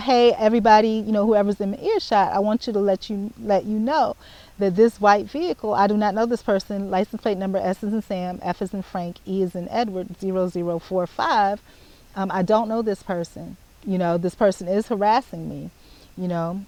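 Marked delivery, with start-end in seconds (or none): none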